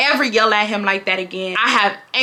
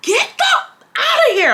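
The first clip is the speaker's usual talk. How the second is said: screaming at very high pitch. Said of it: "I'm going off".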